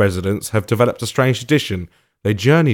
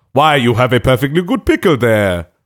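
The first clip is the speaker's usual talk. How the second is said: convincing put-on German accent; 3 dB louder than usual. Chatting with others about a Christmas tradition, in a German accent. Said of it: "Stellar German accent there".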